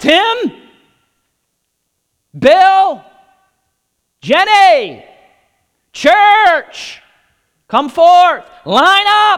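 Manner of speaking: booming, very loud, very high-pitched commanding shout. Describing Jesus descending, the speaker acts out Jesus's loud shout. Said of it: "descend with a loud shout".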